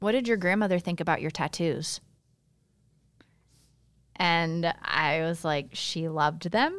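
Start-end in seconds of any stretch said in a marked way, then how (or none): 0.0-2.0 put-on fast, pointedly judgmental, condescending tone. Retelling what a person asked the speaker, in a mock judgmental tone. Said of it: "in a very judgmental tone".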